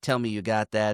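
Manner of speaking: ordinary talk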